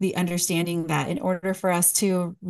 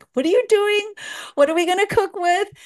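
put-on shrill, very high scream; 13 semitones higher, 4 dB louder than usual. Retelling how her mom came running out: imitating her mom screaming. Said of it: "She was screaming".

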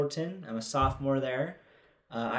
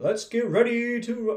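put-on game show announcer voice, much higher; 9 semitones higher, 4 dB louder than usual. Discussing how announcers sound, demonstrating a game show announcer voice. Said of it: "it's almost like a game show voice".

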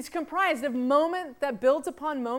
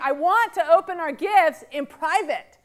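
belligerent raised voice, drawn out; 3 semitones higher, 6 dB louder than usual. Retelling a partner's insistent request at a party: imitating a raised voice. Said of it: "he raised his voice at me".

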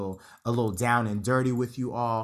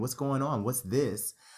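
usual speaking voice

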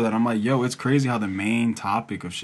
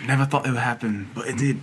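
fake, put-on New Zealand accent. Playacting people from back then hearing old news, in a put-on New Zealand accent. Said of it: "Like from New Zealand".

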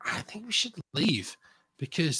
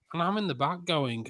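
ordinary talk, nothing marked

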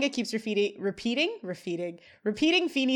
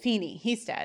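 usual speaking voice

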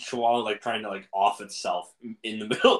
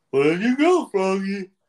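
loud, high, awful cartoon voice; 9 semitones higher, 7 dB louder than usual. Talking about a game, the speaker calls for a missing character in an awful Big the Cat voice. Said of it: "my awful Big the Cat voice".

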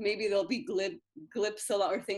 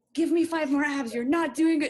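loud, high gym-coach yell; 7 semitones higher, 8 dB louder than usual. Describing a friend who likes being yelled at at the gym, imitating someone yelling. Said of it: "being like yelled at".

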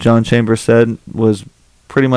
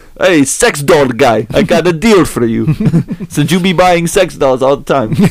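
put-on seedy, dingy, high-pitched Russian accent; 5 semitones higher than usual. Speaker imitates a sex store clerk talking to a customer: dingy Russian accent. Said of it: "Russian accent".

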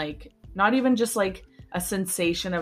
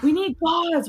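mock yelling, pitched much higher; 10 semitones higher, 4 dB louder than usual. Retelling how a doctor called to the nurse during a mole removal, imitating a doctor yelling. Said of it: "And he's like yelling at her".

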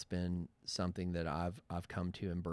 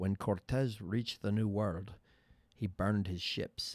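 attempted, put-on Scottish accent; 2 semitones higher, 3 dB louder than usual. Quoting a Sean Connery film line, speaker tries a Sean Connery Scottish accent. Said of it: "That's my attempt at Scottish accent".

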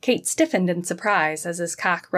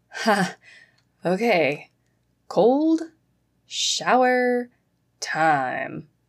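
laughing, heavy stress on every word; 3 semitones higher than usual. [name], laughing from the shadows, speaks up to Kate: laughing, overemphasizing each word. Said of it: "laughed ... as he overemphasized each word".

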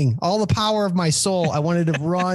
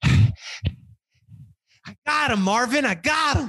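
put-on winded, very slow panting words, pitched-up gasps; 5 semitones higher than usual. Retelling what the receptionist said coming back down the hall: imitating someone out of breath. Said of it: "She's out of breath and she's like".

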